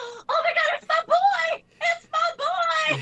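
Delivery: very high, loud, very slow, acted excited gushing. Retelling how someone reacted when a team came back: imitating someone freaking out. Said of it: "he was freaking out".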